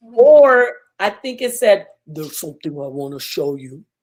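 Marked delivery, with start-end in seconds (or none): 2.1-3.8 very soft, deep, hushed and menacing murmur. Recounting a voice heard in the dark, doing a deep scary voice. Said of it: "really deep".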